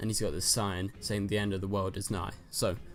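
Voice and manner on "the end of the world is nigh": normal talking voice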